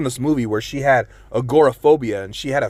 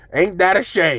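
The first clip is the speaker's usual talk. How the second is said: exaggerated, high-pitched put-on young girl voice; 5 semitones higher than usual. Retelling a daughter's reply to a shared look: imitating daughter in a put-on voice. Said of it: "she doesn't talk like that".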